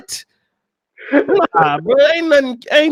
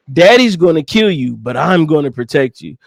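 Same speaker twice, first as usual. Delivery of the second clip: ordinary delivery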